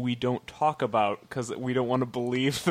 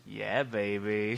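creepy nasal put-on voice, lower and quieter; 4 semitones lower, 7 dB quieter than usual. Discussing a book, reacting to a character's name, creepy nasal voice. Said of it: "the creepy voice you use".

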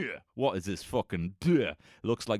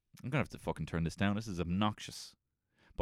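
plain

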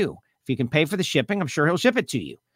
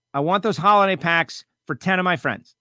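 ordinary delivery

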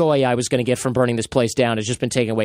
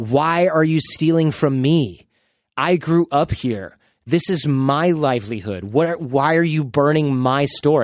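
mock crying, slow, tearful, pleading tone. Describing footage of an old man whose store was looted, imitating his crying plea. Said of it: "he's just crying in the street".

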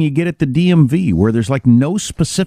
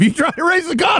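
mock heated, worked-up voice, higher pitch. Imitating an old man who gets such a head of steam: imitating him worked up. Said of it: "doing an impersonation of him".

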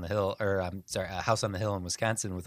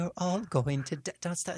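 put-on creepy, very high ghost-girl voice with British accent; 10 semitones higher than usual. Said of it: "What's with the British voice".

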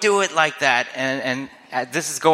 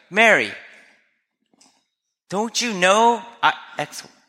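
prickly, defensive, pitched up and slow; 7 semitones higher than usual. Imagining how Jesus could have answered Mary: Jesus sounding defensive. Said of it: "and could have gone defensive".

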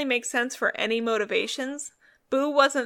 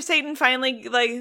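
usual speaking voice

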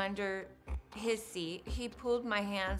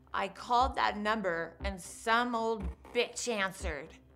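ordinary talk

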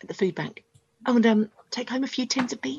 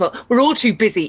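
voice raised right up, very loud; 8 dB louder than usual. Complaining to someone, in a raised voice. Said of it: "you've got me raising my voice now".

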